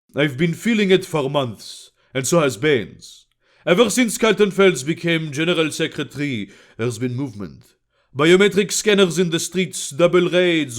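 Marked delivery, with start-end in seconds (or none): none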